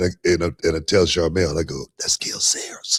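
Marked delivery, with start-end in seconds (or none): 2.0-3.0 put-on awed whisper like a little kid. Retelling pointing out someone he spotted across the room, whispering like a little kid. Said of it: "I said it like a little kid. I'm whispering it".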